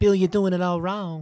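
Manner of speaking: bad Southern accent, very high, loud, belted. Joining in with the impression of a comedian scolding Bill: bad Ralphie May impression. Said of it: "That was bad".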